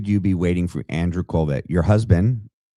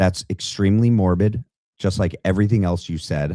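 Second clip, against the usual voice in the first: ordinary talk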